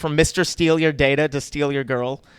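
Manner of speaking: ordinary talk, nothing marked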